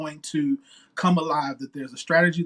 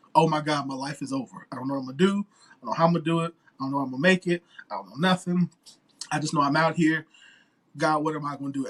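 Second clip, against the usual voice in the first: put-on tearful, despairing, worried crying. Retelling sitting in the car after the divorce, retelling own crying. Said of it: "and I was crying".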